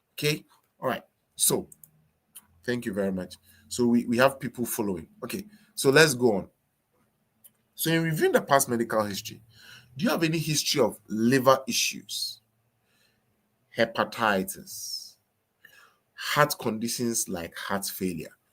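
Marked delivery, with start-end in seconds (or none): 7.8-18.3 voice brought down low. Showing how to ask a patient about medical history: dropped voice. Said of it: "the way I just dropped my voice".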